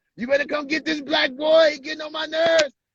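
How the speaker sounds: very high, fed-up holler. Retelling how she disciplined the kids, imitating a woman raising her voice. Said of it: "That's how she used to actually sound".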